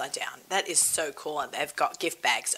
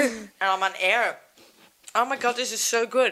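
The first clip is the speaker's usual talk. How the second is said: mouth full, chewing, pitched up; 6 semitones higher than usual. Host eating on air after saying the first blessing, talking with mouth full. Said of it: "Can you hear me chew?".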